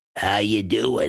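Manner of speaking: deep, low, gravelly, rasping voice. Retelling a figure that appeared by the railroad tracks, deep gravelly voice. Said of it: "Just like in just that voice right there".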